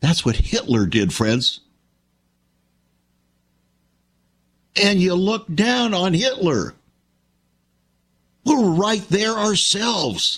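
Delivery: fighting back tears. Speaking to an audience he calls friends, holding back tears. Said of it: "there are tears in my eyes".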